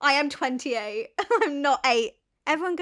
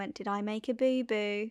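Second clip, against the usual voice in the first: softer, quieter delivery; 4 semitones lower, 6 dB quieter than usual. Retelling a waitress speaking down, imitating someone talking to a child. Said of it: "Still talking to me like a child".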